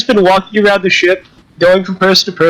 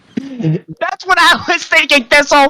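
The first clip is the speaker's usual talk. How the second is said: overly loud voice, higher; 8 semitones higher than usual. Playing a character who talks to Thistle: speaking way too loud. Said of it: "everything I say sounds like I'm yelling".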